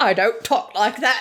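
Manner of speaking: put-on accent leaning toward Cockney. Discussing a voice modeled on Cary Grant, speaker quotes him in a Cary Grant impression, Cockney-ish. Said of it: "that sounded a little more Cockney".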